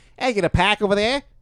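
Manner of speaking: put-on Boston accent, very high. Acting out their own version of a commercial: boston accent. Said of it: "We'll do Boston".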